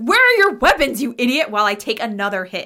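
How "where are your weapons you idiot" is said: loud, furious in-character yell. Describing running in front of a kobold to take a hit, shouting in character. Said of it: "I think I'm like".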